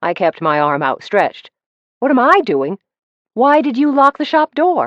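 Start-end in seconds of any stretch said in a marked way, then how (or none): 2.0-4.9 shrill, strained, loud, very high stressed screech. Narrator, scared by a man in the shop, questions him in a loud, stressed voice. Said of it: "My voice sounded a little loud and stressed".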